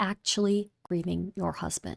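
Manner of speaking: breathy little mock whisper. Repeating a quoted line from a clip, in a little whisper. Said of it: "a little whisper with it".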